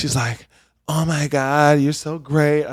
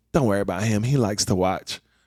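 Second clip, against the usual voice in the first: put-on very low, dead-serious, deadpan delivery; 7 semitones lower, 5 dB quieter than usual. Retelling what a woman said after the show: imitating a deadpan line. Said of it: "straight face".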